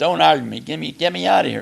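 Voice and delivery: high panicked yell.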